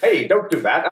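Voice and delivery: high, put-on standard American accent.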